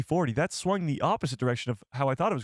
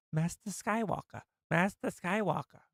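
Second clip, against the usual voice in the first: put-on female voice, pitched higher; 5 semitones higher, 5 dB quieter than usual. Speaking to chat, trying a character's line as a Barriss Offee impression. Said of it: "I'm not a female".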